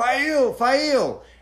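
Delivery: high-pitched, loud scream of a name. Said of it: "he screams out".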